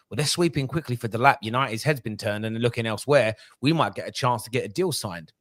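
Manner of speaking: normal talking voice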